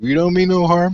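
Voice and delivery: calming, reassuring voice, called out. Voicing a character calling out to a frightened stranger: yelling back. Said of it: "I yelled back".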